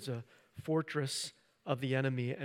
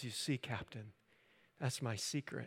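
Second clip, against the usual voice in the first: put-on calm voice, quieter; 7 dB quieter than usual. Speaker retelling a film scene, quoting Bruce Banner to the Captain, imitating Bruce Banner's calm. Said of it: "He just calmly says".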